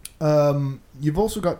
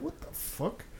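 soft, whispered, incredulous aside. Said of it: "I was like".

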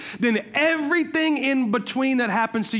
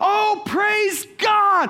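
put-on exultant shouting, high and joyful; 9 semitones higher than usual. Telling a story, the speaker acts out the lady at the door: retelling her shouting. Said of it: "she starts shouting and dancing".

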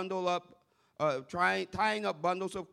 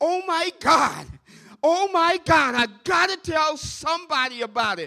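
mock bursting excitement, gushing, pitched high; 9 semitones higher, 10 dB louder than usual. Speaker imagines a man excited about a dream from the Lord, imitating an excited voice. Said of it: "I can just imagine he's all excited about it".

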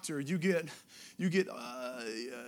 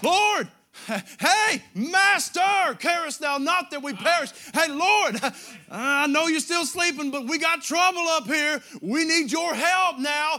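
acted frantic, panicked cry, very loud and slow; 10 semitones higher, 11 dB louder than usual. Acting out the disciples as they begin to panic in the storm: acting out panicked disciples. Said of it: "Then they begin to panic, and they go".

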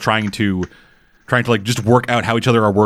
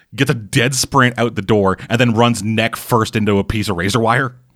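ordinary talk

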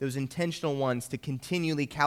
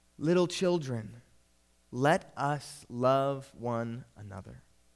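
put-on shaky, quavering, slow old person's voice. Retelling an anecdote, the speaker quotes the elder John giving a lesson: imitating John's shaky voice. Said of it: "he said in a shaky voice".

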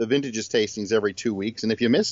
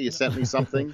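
ordinary delivery

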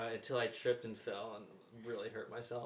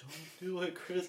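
mock weepy, high, slow crying plea; 8 semitones higher, 4 dB louder than usual. Retelling a video of a mom watching her son bury himself, imitating crying mom. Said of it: "she's just crying like".

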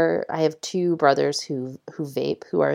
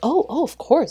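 mock, very high, super surprised gush; 11 semitones higher than usual. Imitating people asked to move a bag off a seat, mock super surprised. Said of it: "they act like super surprised".

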